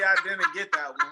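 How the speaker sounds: loud, high-pitched fake clueless voice. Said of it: "just destroy somebody's joke".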